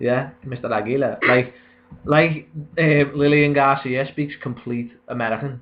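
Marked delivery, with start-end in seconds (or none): 0.4-1.2 slight Spanish accent. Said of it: "a little accent".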